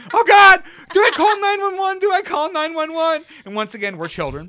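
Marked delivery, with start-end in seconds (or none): 0.1-3.2 very loud, high, panicking frantic scream. Recounting mom panicking about the baby, imitating mom screaming in panic. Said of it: "my mom is just screaming".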